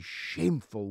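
"shameful" emphasized. A supporter of the Commonwealth speaks about the treatment of its Caribbean citizens, stress on "shameful". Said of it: "I accentuate the word shameful".

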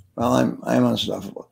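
mock timid, weak, hesitant delivery. Retelling how audience members first said the phrase: imitating a timid hesitant attempt. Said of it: "Don't suck your thumb".

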